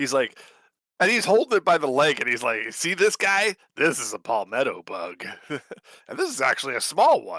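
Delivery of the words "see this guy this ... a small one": sing-song, swooping put-on character voice, wide pitch swings. Quoting a TikTok seller holding a palmetto bug: Doofenshmirtz voice. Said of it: "I was kind of going into Doofenshmirtz".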